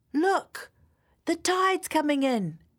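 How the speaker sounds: shrill, very high call-out shout. Narrator reading a boy calling out among a group of children, shouting. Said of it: "shouted a boy".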